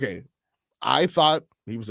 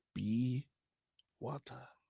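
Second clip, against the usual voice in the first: badly done, almost under the breath; 12 dB quieter than usual. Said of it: "Please stop".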